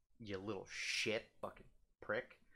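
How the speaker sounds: angry, heated, hissed whisper under the breath. Ranting about a person at the printer, angry, heated. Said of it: "I'm getting heated".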